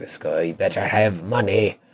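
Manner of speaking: put-on pirate-like voice. Voicing Skywyn demanding money from the sky: pirate voice. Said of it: "she sounded like a pirate".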